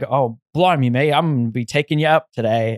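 put-on Australian accent. Retelling what the skydiving guy said: imitating an Australian accent. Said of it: "he's, like, Australian or something".

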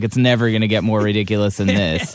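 ordinary talk

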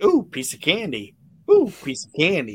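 loud "ooh" with big pitch swoops. Joking that Paul Bearer would eat anything off the carpet: Paul Bearer impression. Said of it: "He'd be like".

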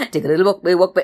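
very fast, rapid pace. Showing how to retell the bear's walk home in a storytelling demonstration: very fast. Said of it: "repeat the whole story in a very, very fast motion".

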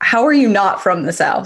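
normal talking voice

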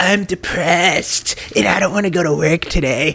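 high, drawn-out, teasing send-up voice. Mocking the others by doing their voices, imitating Kelsey. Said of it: "here's Kelsey".

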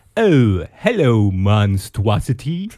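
animated character voice with pitch swinging all over. Retelling a Halloween special where Homestar Runner greets a disgusting costume: imitating Homestar Runner. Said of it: "Homestar's like".

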